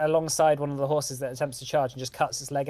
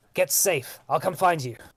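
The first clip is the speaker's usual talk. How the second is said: mild voice, called out across a distance; 2 semitones higher than usual. Voicing a fighter calling across a battle to another character: shouting. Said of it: "shouts over to you".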